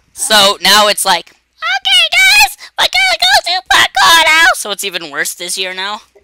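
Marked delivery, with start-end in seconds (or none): 1.3-4.5 very high-pitched, loud vlogger-style voice. Acting out how he sounds saying it this year, imitating own high-pitched voice. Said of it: "My voice is even higher this year".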